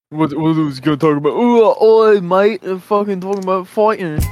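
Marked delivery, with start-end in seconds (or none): 1.4-4.2 put-on British accent. Mocking a British co-host by imitating him: mock British accent. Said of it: "this British motherfucker".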